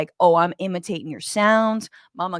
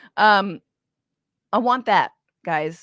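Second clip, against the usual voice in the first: ordinary talk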